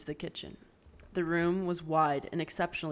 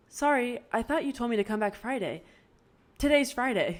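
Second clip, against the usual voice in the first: put-on high-pitched voice, not her own; 7 semitones higher, 3 dB louder than usual. Narrator reads Pip answering Ravi in the doorway, in a high-pitched voice. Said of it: "in a high-pitched voice that wasn't her own".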